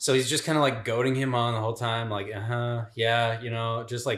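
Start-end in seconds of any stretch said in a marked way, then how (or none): 2.3-3.4 mock, casual, indifferent nonchalant tone. Retelling how a character goaded the gunslinger: imitating a nonchalant tone. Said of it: "totally nonchalant".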